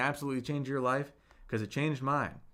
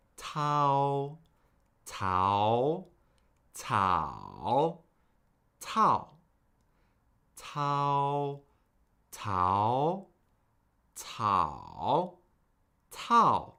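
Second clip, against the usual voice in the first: tau through four tones in turn, drawn out. Teaching an online class, leading students through the four tones of tau. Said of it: "cycle through the four tones".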